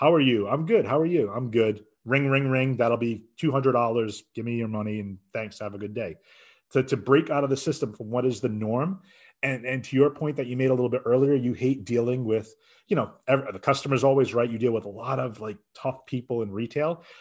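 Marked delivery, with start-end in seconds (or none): 0.0-6.1 put-on robot-like mechanical delivery. Mocking a routine retail checkout exchange; imitating robotic checkout talk. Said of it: "such a robotic".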